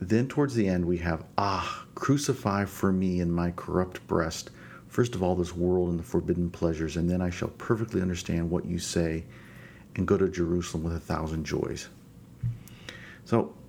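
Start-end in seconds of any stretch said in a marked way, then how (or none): none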